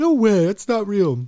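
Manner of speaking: very high-pitched, loud, squeaky voice. Retelling a night drive, imitating the buddy in the backseat: high-pitched voice. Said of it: "he had this high-pitched voice".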